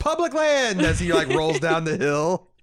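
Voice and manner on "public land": mock shrill shout, way up high. Retelling a character's line from an episode: imitating a shout. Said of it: "he shouts".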